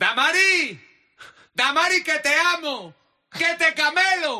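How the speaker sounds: put-on shouting. Retelling someone yelling to a three-year-old in the school line, retelling a shout. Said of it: "Y le gritaba".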